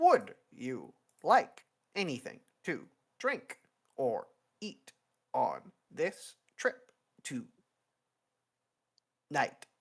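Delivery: crackly little robotic machine voice over intercom speaker. Narrator voicing the intercom as the passengers hop in, little robotic intercom voice. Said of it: "a little robotic voice crackles over the intercom and says".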